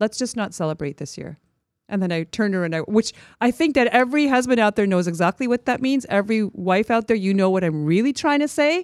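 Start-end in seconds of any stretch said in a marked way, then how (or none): 0.0-1.4 dry, quiet, deadpan delivery. Retelling what the speaker said to her husband, retelling a deadpan remark. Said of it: "stone-faced, deadpan".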